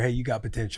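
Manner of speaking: put-on soft whisper. Joking about whispering to people in canada: put-on soft whisper. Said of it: "just softly whisper to 'em in their ear".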